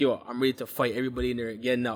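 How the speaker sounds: ordinary talk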